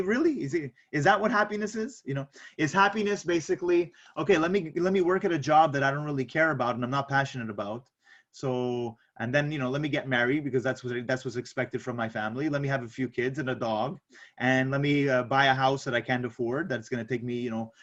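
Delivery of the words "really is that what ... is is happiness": ordinary delivery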